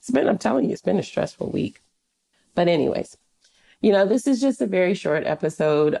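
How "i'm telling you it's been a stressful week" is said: irritated, irritable, rough, creaky voice. Speaker tells listeners it has been a stressful week, sounding irritated. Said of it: "Can you hear it in my voice?".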